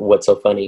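dead-serious tone. Retelling asking the laughing guys a question: retelling own dead-serious question. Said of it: "dead serious".

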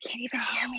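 funny, quiet whisper. Showing the others a quiet whisper they can't hear: funny whisper. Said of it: "Listen to this funny whisper I do".

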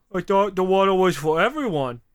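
put-on frumpy, dumpy guy voice. Retelling what a man said to her, quoting him in a dumpy voice. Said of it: "I like how you're using the dumpy voice for him".

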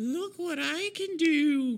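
high, slow, creepy sing-song monster-like taunting.

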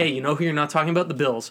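ordinary talk, nothing marked

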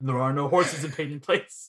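dark, doom-laden, ominous, foreboding delivery. Repeating another player's line back to them, mimicking an ominous tone. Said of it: "The way you said that sounded like ominous".

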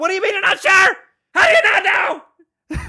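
put-on angry shrill yell, very high-pitched. Retelling questioning a daughter about feeding a hamster: imitating screaming angrily. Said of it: "Just screaming at her, all pissed off".

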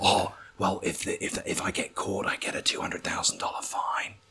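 hushed whisper.

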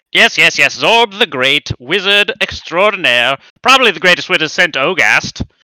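shrill, loud, squawking goblin voice. A goblin who thinks he's a wizard answers the mayor, in Zorb the Great goblin voice. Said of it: "My character is [name], the greatest goblin wizard to ever live. Mm-hmm. So he isn't technically a wizard, but he thinks he's a wizard".

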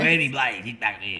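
mock typical masculine dude, old-fashioned bloke voice. Imitating the typical guy who comes home from work: imitating a typical masculine dude. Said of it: "the guy works, he comes home and he's just like".

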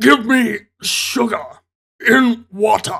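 slow alien voice, each word drawn out. Recapping a movie scene where the alien wearing Edgar's skin speaks, Edgar alien impression. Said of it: "that's the best impression i can do".

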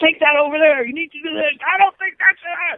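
very high, pushy, in-your-face screaming. Imitating Joe, who is said to be born screaming: imitating Joe screaming in-your-face. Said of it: "born screaming out stuff".

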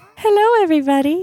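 heavy thick Irish accent, very high pitch. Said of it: "There you go".

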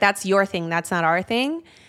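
disgusted voice. Retelling own past reply to a worship leader: imitating own disgusted tone. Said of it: "a little bit of a disgust".

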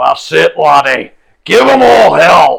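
booming fire spirit voice, very loud, rough, drawn-out. Voicing a man made of fire cheering on a fighter: fire spirit cheering on. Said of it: "a man made of fire, and he's sitting there going".

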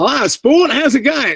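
put-on Australian accent, pitched very high. Imitating friends who never lost their accent: imitating an australian accent. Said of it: "never lost their Australian accent".

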